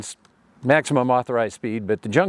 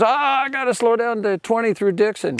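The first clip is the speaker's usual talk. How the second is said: loud call hollered out, pitched way up; 11 semitones higher than usual. Retelling how the other engineer hollered across between the two trains: retelling a holler. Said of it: "Jim hollered over to us".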